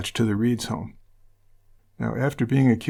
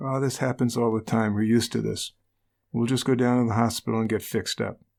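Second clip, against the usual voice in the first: normal talking voice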